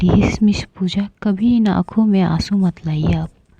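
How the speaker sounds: ordinary delivery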